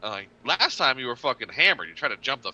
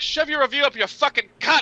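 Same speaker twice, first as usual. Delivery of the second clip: mock raging furious shout, very high-pitched; 14 semitones higher, 4 dB louder than usual. Speaker retells yelling around the corner at people threatening bad reviews; retelling an angry yell. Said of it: "yelling around the corner like".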